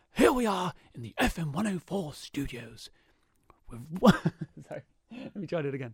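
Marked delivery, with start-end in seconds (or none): 0.2-2.9 nature narrator impression, much quieter. Asked in the studio to do a voice, making a first try at a David Attenborough impression. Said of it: "Can you do David Attenborough?".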